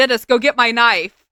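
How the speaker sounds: loud, bellowing yell from a distance. In a tent, retelling what the speaker's dad yelled; retelling dad's yell. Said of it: "I hear my dad yell".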